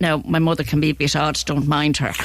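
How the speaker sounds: ordinary talk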